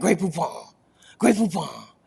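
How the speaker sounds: clumsy, bad, fake put-on French accent. Speaker admits they can't do a French accent, then tries: bad fake French accent. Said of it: "I can't do a French accent".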